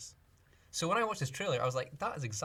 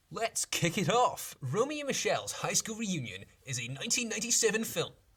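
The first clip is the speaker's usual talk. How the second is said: put-on hyped, fake-enthusiastic radio host voice, pitched up; 5 semitones higher, 4 dB louder than usual. Introducing the next film on the list in a fake enthusiastic radio guy voice. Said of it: "Do you like my fake enthusiastic uh, radio guy voice?".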